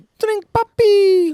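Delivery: slow, high, shouted mock Miami accent.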